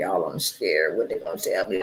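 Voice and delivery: play-acted scared, tearful, crying, pleading tone. Retelling a phone call to her kids while waiting: imitating her own crying. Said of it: "I'm crying to my kids".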